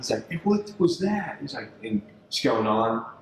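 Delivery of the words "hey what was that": mock very high-pitched shouted yell. Retelling how the dad reacted to a snake on the line: imitating someone yelling. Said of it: "He starts yelling at me".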